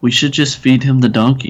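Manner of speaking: hushed whisper. Playing Rick, who follows Batman and whispers a suggestion: whispering. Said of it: "he whispers".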